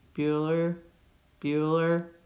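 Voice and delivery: lifeless, flat, droning monotone. Advice on vocal variety, mimicking a flat Ferris Bueller monotone. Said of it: "No monotone. Kind of like with Ferris Bueller".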